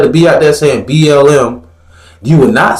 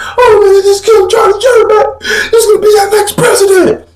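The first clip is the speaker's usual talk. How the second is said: tearful, very high sobbing, crying voice. Retelling a circulating clip of a man: imitating someone crying. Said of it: "He crying like".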